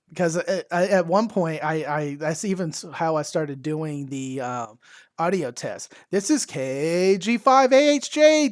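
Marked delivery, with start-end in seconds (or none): 6.1-8.4 put-on loud talking, higher and louder. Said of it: "talking loudly".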